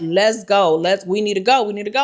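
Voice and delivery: ordinary talk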